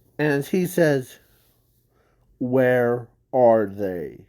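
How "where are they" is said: really deep, dark, low-voiced tone. Retelling a story, the speaker voices the character who landed on the boat, deep, dark tone. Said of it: "in a really deep, dark tone".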